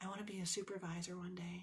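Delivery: very quiet, tiny, shy mouse voice. Retelling what a shy woman said to the speaker, very quiet mouse voice. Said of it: "very quiet in a mouse voice".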